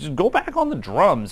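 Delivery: high-pitched, high-band teacher-style voice. Retelling what the band teacher told him, in a high-pitched voice. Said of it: "he would just have this high pitched voice".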